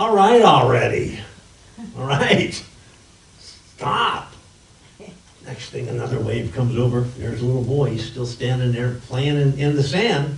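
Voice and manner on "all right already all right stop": mock big booming voice from above, very slow. Telling a story, voicing the reply from the sky in a big booming voice. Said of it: "this kind of big booming voice coming out of the sky".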